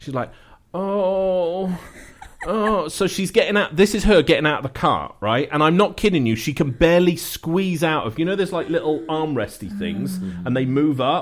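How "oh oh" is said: mocking put-on woman voice, much higher. Telling a story about a woman getting out of a car, offensive impression of her. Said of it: "my worst offensive impression of this woman".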